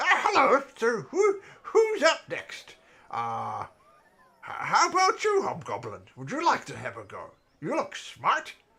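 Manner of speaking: booming, loud, sing-song, swooping bird-creature voice. Voicing an Aarakocra inviting a hobgoblin to have a go: voicing an Aarakocra. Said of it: "the Aarakocra flies out of his chest again".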